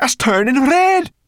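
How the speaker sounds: high-pitched, loud, frantic outcry. Narrator reads Sorrel crying out to Ben, crying out frantically. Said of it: "she cried frantically".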